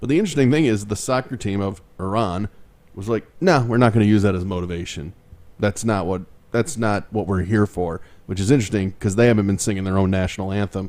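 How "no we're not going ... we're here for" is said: ordinary delivery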